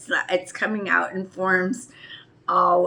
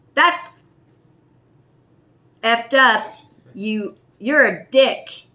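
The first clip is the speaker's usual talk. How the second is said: acted furious outburst, loud angry yell; 4 semitones higher, 5 dB louder than usual. Retelling confronting a coworker at work, retelling a yell. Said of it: "I walked over and I yelled".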